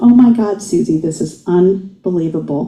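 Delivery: plain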